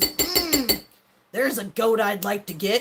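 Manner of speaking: slow, sleazy, lecherous come-on voice. Mocking how some men sound, imitating a horny man. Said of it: "sound like a horny man who goes".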